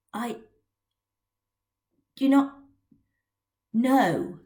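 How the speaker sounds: dry, barely managed croak, words squeezed out. Narrating a boy with chapped lips answering Maggie's question, in a dry croak. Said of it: "he managed to croak".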